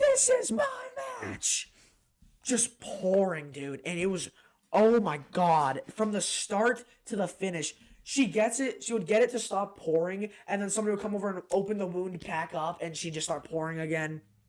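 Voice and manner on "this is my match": put-on, very high-pitched scream. Retelling a wrestling match where a bleeding wrestler screams: imitating someone screaming. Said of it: "She starts screaming".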